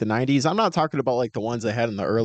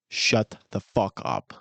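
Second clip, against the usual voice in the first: slow, fed-up, irritated, pissed-off tone; 3 semitones lower than usual. Acting out what a listener says on hearing the Bears: imitating Mason, pissed off. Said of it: "I'll embody what Mason does".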